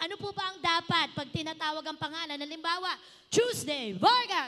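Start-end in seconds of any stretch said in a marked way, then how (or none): 3.3-4.5 shouting loudly. Showing how a name should be called out: shouting the name loudly. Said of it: "Ganyan, kailangan malakas sa sigawan".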